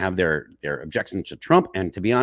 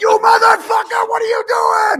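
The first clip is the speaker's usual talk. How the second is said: enraged, shrill, loud screaming, very high; 7 dB louder than usual. Recounting watching someone on TV, retelling screaming at the TV. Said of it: "I was screaming at my TV".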